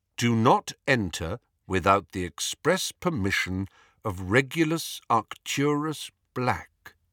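plain

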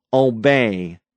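loud, commanding, the word held long. Narrator reads Frank ordering a hesitating guard to obey, in a loud, commanding voice. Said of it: "Frank said in a loud, commanding voice".

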